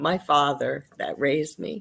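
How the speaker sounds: choked-up voice catching with emotion. Answering an interviewer's question about a hero, choked up. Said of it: "I'm getting choked up".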